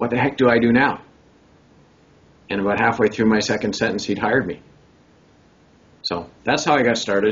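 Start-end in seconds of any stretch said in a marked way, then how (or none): 0.0-1.0 mock alarmed, panicked, frantic, at wit's end. Retelling how the man who then hired him asked for help, imitating a panicked voice. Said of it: "he asked me in this panicked voice".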